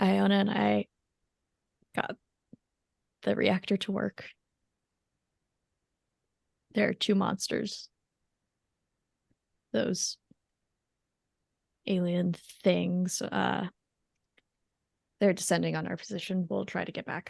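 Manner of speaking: slow, deliberate stage whisper. Reporting in character to the group: stage whisper. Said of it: "Stage whisper".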